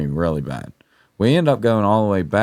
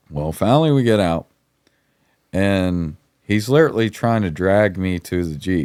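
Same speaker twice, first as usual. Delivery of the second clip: ordinary talk, nothing marked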